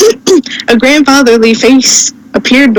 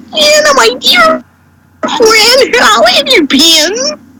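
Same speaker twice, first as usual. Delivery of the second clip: put-on grandfatherly character voice, much higher; 12 semitones higher than usual. Showing how a grandfatherly figure greeting Anna could sound, in a Whitey voice from Eight Crazy Nights. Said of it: "you could probably do a Whitey voice from Eight Crazy Nights".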